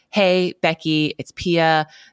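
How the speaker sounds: put-on strong Swedish accent, laid on thick. Retelling a voicemail message from Pia, imitating Pia's heavy Swedish accent. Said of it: "she's super Swedish. And so heavy accent".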